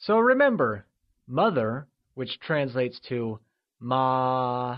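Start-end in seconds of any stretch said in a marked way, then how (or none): 3.8-4.8 ma held high and flat, first tone. Mandarin lesson on the word for mother, high level tone on ma. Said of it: "is said with a constant high-level tone, also known as the first tone".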